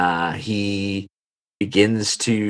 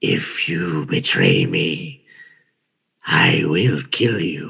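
low, very slow, heavy dragon creature voice; 4 semitones lower than usual. Voicing the creature as it looks a player eye to eye: voicing the dragon creature's threat. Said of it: "he goes".

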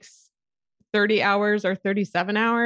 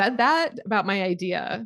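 plain

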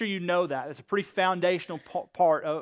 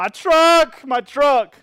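put-on high, very loud, crying little kid's wail; 8 semitones higher, 12 dB louder than usual. Speaker describing a young boy whose truck breaks in the sandpit, imitating a wailing child. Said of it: "he starts wailing and crying".

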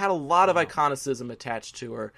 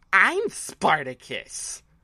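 swooping, dramatic Broadway star voice; 4 semitones higher than usual. Retelling a performer's improv line on stage: Carol Channing voice. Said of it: "in his Carol Channing voice said".

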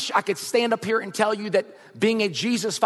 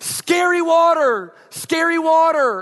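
very slow, high, loud, drawn-out frightened yelling; 8 semitones higher, 6 dB louder than usual. Retelling a son's panic in a car wash: imitating John Wesley yelling. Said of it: "He started yelling".

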